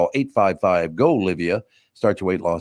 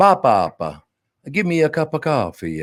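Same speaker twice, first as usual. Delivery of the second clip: put-on high, slow toddler voice with Italian accent; 6 semitones higher than usual. Telling how his two-year-old grandson talks, the speaker does a toddler's Italian accent. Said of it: "my two-year-old grandson speaks with an Italian accent".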